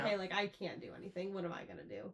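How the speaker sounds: ordinary talk, nothing marked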